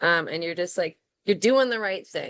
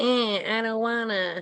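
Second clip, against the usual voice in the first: put-on little whiny voice, drawn out; 4 semitones higher than usual. Retelling own thoughts on hot, repetitive farm days: put-on whiny voice. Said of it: "did this little whiny voice".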